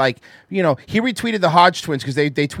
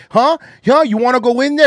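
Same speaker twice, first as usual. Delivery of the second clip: put-on scream, higher and louder; 7 semitones higher, 5 dB louder than usual. Retelling a guard taunting a fourteen-year-old outside the door: imitating someone screaming. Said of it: "they were screaming at him".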